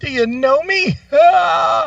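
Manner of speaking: high, loud mock yell.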